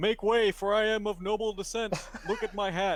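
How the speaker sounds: shouting as loud as possible. Acting out a deception check in character: yelling as loud as possible. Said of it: "I'm going to yell as loud as I can".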